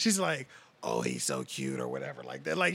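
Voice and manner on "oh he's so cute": soft, badly damaged, wrecked voice. Retelling a lady talking to a small nephew: imitating a lady's wrecked smoker voice. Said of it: "she's talking to my nephew like that".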